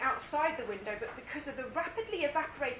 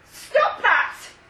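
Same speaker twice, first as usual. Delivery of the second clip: very loud, high, trembling, quivering cry; 8 semitones higher, 15 dB louder than usual. Narrating a story, voicing a character's line to the boy, in a quivering voice. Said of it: "Terry's voice quivered".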